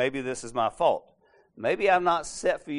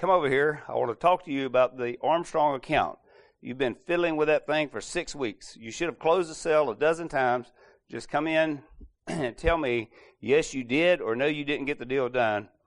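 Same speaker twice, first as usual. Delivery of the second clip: ordinary talk, nothing marked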